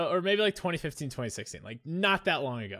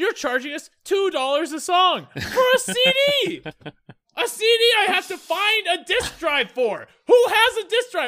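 acted, very high, very loud, shrill, losing-it rant; 9 dB louder than usual. Retelling a past rant while their then-partner stayed out of it, acting out losing my mind. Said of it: "I'm like losing my mind".

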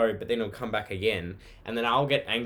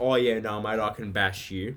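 put-on arrogant, cocky voice. Retelling how Tommy brags before their fights: imitating Tommy being arrogant. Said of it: "Tommy occasionally gets really arrogant".

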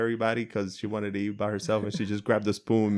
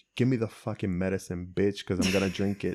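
mock defiant, sassy, attitude-filled back-talk; 2 semitones lower than usual. Voicing what her look said about the medicine, with mock attitude. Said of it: "a major attitude that day".

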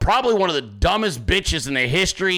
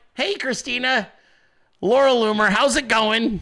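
high, cute, casual pitched-up voice; 6 semitones higher than usual. Retelling how Laura Loomer introduced herself: imitating Laura Loomer. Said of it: "she shows up and she's like".

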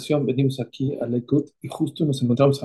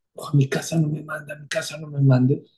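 put-on tearful, crying voice. Retelling a student begging not to be sent home: imitating a crying plea. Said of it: "Y empezó a llorar, pero con una manera muy rara, con mucho sentimiento".

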